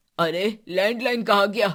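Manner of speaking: calling out loudly at a full shout. In a family skit, grandfather can't find the hidden landline, shouting. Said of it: "क्यों चिल्ला रहे हैं".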